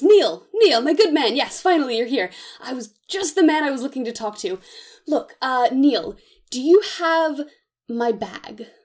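eager, worked-up tone. Narrating one man greeting another, acting out getting a little excited. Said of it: "he sort of like gets a little excited".

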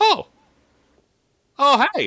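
very high, very loud, shrill, swooping droid voice. Voicing a droid startled by a climber: protocol droid voice. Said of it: "a voice go, like".

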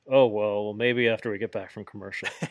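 put-on muttering, mumbled under the breath. Retelling a commentator's reply: imitating someone muttering under his breath. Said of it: "Tony just under his breath says".

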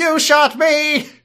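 very high, loud shouting voice. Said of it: "has Dalek voice".

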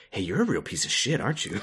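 soft, hushed whisper under the breath. Retelling scenes of people leaning in to Naminé, imitating a whisper. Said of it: "whispering to Naminé".

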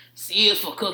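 put-on gruff monster voice. Imitating a three-year-old son at dinnertime: Cookie Monster voice. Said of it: "what he sounds like is fucking Cookie Monster".

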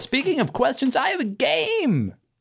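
grand, very high, swooping game-show announcer voice.

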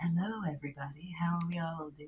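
hushed, very soft, weird purring jazz radio host voice. Suggesting a new way to greet the show's audience, in a purring jazz radio host voice. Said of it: "purring, like jazz radio host".

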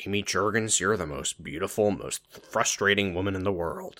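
throaty delivery. Redoing a Ben line to Amy after being told to go throatier, throatier Ben voice. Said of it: "Get a little throatier with it".

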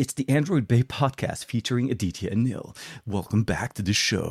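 put-on radio announcer voice. Podcast host opening the Android Bay podcast, imitating Juan Carlos's radio voice. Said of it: "my best radio voice".

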